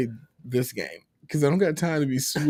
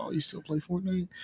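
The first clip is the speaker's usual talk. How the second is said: put-on higher, soft, teasing kid voice. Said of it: "and they're like".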